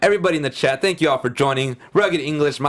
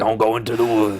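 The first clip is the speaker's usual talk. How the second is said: put-on low, gruff old man voice; 4 semitones lower than usual. Quoting a line from a movie trailer: old man gruff voice. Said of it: "Old man gruff voice".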